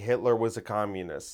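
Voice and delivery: ordinary talk, nothing marked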